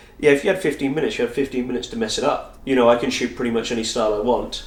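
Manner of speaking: ordinary delivery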